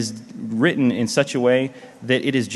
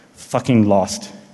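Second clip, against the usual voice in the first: put-on British accent, lower pitch; 4 semitones lower than usual. Retelling what Major Malfunction said on seeing the lanyards: British accent imitating Major Malfunction. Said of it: "the great British accent".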